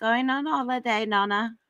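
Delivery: put-on high, little toddler voice with an Australian accent. Retelling what a two-year-old said while packing: imitating Poppy's little Australian accent. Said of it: "With her little, like, Australian accent".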